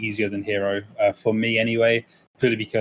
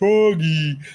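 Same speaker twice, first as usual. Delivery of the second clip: dim-witted, stupid-sounding voice; 6 semitones higher, 4 dB louder than usual. Describing an unintelligent Sonic character chasing his pet frog, imitating a stupid-sounding voice. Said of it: "with a really stupid like voice".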